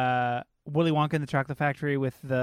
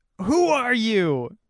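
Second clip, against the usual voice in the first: raised, pitched-up, loud yell; 8 semitones higher, 5 dB louder than usual. Over a roar growing louder, shouting a question to a confused man, yelling. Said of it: "I yell".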